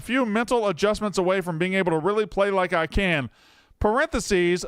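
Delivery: ordinary delivery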